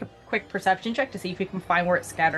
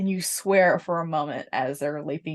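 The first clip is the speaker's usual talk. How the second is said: plain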